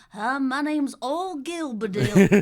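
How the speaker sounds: very slow, drawn-out, high kids' cartoon goat voice. Joking about a combined last name: little cartoon goat voice. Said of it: "like a little goat on a farm in a kid's cartoon going".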